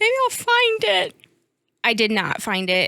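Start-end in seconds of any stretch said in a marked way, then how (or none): 0.0-1.2 mock tearful sob, pitched very high. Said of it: "and I'm like sobbing".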